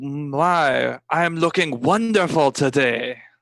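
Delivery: put-on slow French accent with my drawn out. Trying once more to copy Jean-Pierre's accent: imitating Jean-Pierre's French accent. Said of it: "let me try this one more time. I look at Jean-Pierre and I go".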